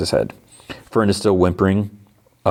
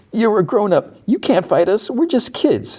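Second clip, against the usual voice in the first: mock crying, higher. Retelling a show scene where a kid pleads: imitating someone crying. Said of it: "And she's, like, crying".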